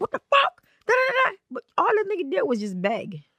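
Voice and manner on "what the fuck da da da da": high, outraged exclamation. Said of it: "what I would have thought he would have been was like".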